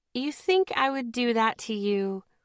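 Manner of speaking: honeyed, syrupy, sweet, sugary voice. Reading a story: teasing a friend after tossing him candy, sweet voice. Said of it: "I asked in my sweet voice".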